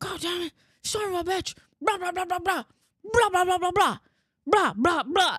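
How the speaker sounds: very high-pitched, loud angry cursing rant. Retelling hearing a husband talking shit in the basement: imitating husband cursing to himself. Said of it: "talking shit in the basement".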